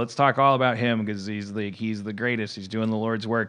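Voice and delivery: ordinary talk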